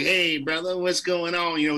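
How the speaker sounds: put-on old-school seventies jazz-cat voice. Describing an old band director from age fifteen, cliché 70s jazz guy voice. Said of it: "That kind of voice".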